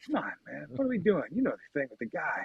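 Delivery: put-on elderly politician voice. Showing how an impression works, listening with his eyes: Joe Biden impression. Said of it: "working on the Biden impression".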